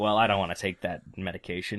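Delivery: plain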